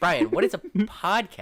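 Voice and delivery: very loud, animated, swooping dad voice. Friends joke about Brian's dad hearing their podcast, imitating Brian's dad. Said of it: "my impression of Brian's dad".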